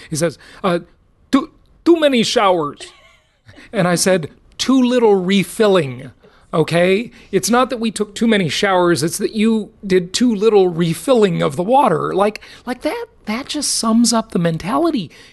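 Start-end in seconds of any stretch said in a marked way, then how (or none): 1.3-2.9 put-on Russian-Croatian accented speech. Retelling a dispute about running out of water, imitate Sanjin's sort of Russian, Croatian accent. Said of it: "like in his sort of Russian, Croatian accent".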